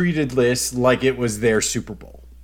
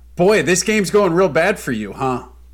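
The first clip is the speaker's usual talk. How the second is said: booming, full-volume, very loud put-on voice; 4 semitones higher, 3 dB louder than usual. Retelling what someone said walking in during the game, imitating Sawyer talking loudly. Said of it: "very loudly goes".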